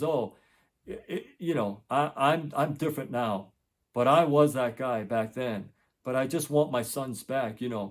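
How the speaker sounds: usual speaking voice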